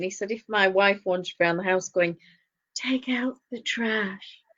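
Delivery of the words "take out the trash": put-on breathy sat nav voice, quieter. Retelling a comedian's sat nav bit: imitating a breathy sat nav voice. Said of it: "sat nav voice".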